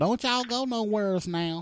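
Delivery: put-on old Southern woman voice. Speaker doing a bit about old women in the south, imitating old southern woman. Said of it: "That's our old old women in the south though".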